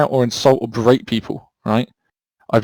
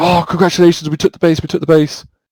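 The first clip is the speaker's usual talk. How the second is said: mock shouting in a higher put-on voice; 4 semitones higher than usual. Explaining how people run out of breath, the speaker acts out retelling a shout. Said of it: "you're screaming, you're shouting".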